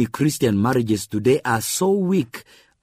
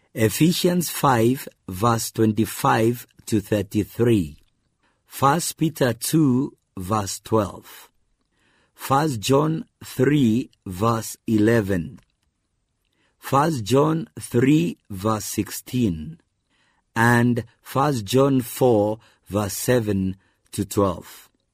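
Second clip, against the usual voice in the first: slow, deliberate reading, as for dictation. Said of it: "I'll read them slowly so that you can write them down".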